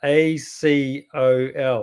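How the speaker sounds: slow, letter-by-letter spelling of Acol.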